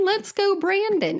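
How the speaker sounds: high, innocent cheerful voice. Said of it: "And he said".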